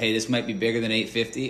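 ordinary delivery

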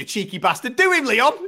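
put-on furious yelling. Retelling shouting at the tv during a fight: retelling angry shouting at tv. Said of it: "I'm angry as fuck shouting at T V".

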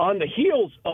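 voice cracking and breaking mid-phrase. Giving a betting lock when asked, voice cracking. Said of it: "my voice just cracked".

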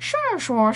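put-on Mandarin-sounding gibberish.

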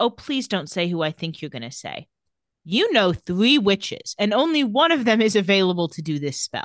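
ordinary delivery

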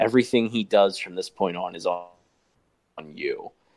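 ordinary talk

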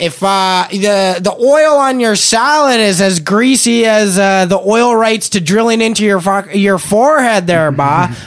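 strong put-on Newfoundland accent. Retelling how she grilled him at parliament, in a very newfoundland accent. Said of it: "with a very Newfoundland accent".

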